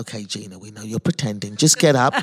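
mock whispering voice. Retelling what a paramedic said close to the ear: imitating a whisper. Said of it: "whispers in my ear".

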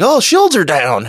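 slow, high, put-on Southern drawl. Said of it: "he was like".

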